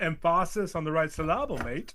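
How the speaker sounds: mock Australian accent, only slightly shifted. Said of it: "that was Australian and not U K".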